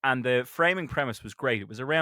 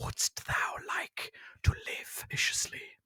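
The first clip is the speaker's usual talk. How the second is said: quiet, slow whispering. Giving a survival tip, quoting what a voice in the dark says: imitating a whispering voice in the dark. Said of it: "a whispering voice in the dark that says".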